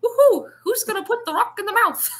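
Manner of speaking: very high, shrill, very loud cartoon mouse squeal. Comparing with how the line could be said, mocking it in a cartoon-mouse voice. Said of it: "That's so much better than like".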